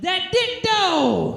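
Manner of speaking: put-on sudden blurted yell, shrill and very high. Retelling a sudden outburst in the middle of sex: imitating her own shout. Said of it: "I just shouted".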